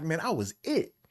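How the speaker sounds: high, cocky, boastful bragging tone. Retelling how someone kept hyping up his high school days: imitating someone bragging. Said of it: "he kept hyping it up".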